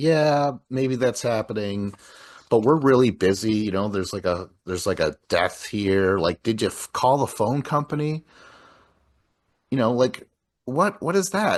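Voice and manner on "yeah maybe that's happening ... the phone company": ordinary talk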